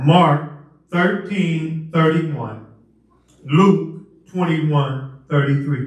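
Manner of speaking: slow, deliberate repeat, said very slowly.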